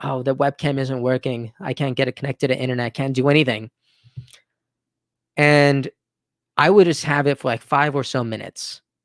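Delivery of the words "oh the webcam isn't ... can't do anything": ordinary talk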